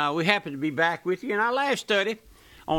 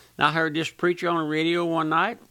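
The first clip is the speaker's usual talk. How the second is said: normal talking voice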